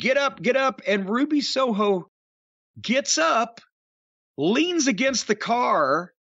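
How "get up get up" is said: mock insistent, repeated, screamed delivery. Retelling a wrestling video scene, imitating Ty Conti screaming. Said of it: "she's screaming at Ruby".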